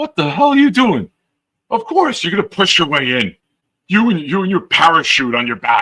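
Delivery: loud high-pitched hollering. Retelling a subway scene where a man yells at a lady: imitating a man yelling. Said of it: "There's a guy yelling at the lady".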